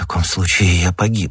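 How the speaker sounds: usual speaking voice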